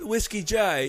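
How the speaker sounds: amateur, bad, fake put-on English accent. Acting out a scene with another speaker, in an amateur put-on English accent. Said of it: "let me tell my two week English accent here".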